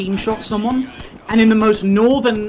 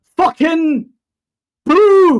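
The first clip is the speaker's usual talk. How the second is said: raised, pitched-up football fan yell; 8 semitones higher, 7 dB louder than usual. Retelling a comedian's bit about a Scot at a football match, retelling a fan's shout. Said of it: "stood up and went".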